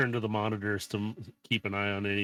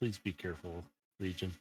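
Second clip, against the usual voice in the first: light, soft half-whisper, barely audible; 2 semitones lower, 8 dB quieter than usual. Speaking to a character sleeping in a tank: half-whispering in character. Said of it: "just whispering".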